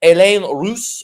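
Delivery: clumsy, bad French accent on a name. Host introducing tonight's guest, a casting director from Montreal, horrible French accent. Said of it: "my horrible French accent".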